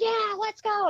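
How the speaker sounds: put-on shrill, very high, fired-up scream. Retelling cheering on the field by the team tunnel: retelling own screaming. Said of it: "but I am screaming".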